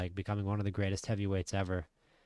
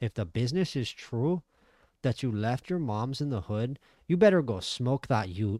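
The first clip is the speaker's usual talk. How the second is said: put-on Canadian Toronto street-talk voice; 4 semitones higher, 6 dB louder than usual. Commentating a fight in a video game, imitating a Canadian fighter. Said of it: "every Canadian fighter in this game sounds like".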